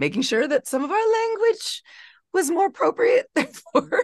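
voice breaking very high mid-phrase. A guest in an interview explaining a choice of language, voice cracking. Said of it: "see how my voice cracked".

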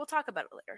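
the most mellow, calm tone possible. Retelling a movie character's reply to his vomiting wife: imitating a very mellow tone. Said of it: "in the most mellow tone possible".

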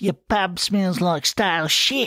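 sneering, mocking tone, very high pitch. Reading a story, Ferret speaks to the publican, sneering. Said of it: "He sneered".

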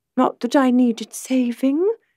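mild, gentle tone. Narrator reads a woman's reply to the man holding her, said softly. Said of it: "Imogen said softly".

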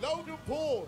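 loud high-pitched yell.

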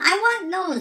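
put-on little young teenage voice. Voicing the teenager inside on first seeing a shoe, little teenage voice. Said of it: "this little teenage voice inside".

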